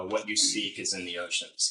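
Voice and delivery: ordinary talk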